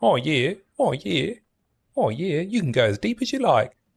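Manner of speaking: bad put-on Kiwi accent. Trying again at a soundbite for a channel point redeem, in a bad New Zealand accent. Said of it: "let me let me get into character".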